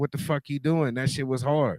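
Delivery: ordinary delivery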